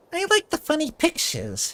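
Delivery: very high, squeaky, sing-song little cartoon mouse voice. Voicing characters while reading aloud, the speaker gives one a mouse voice. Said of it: "Mouse voice".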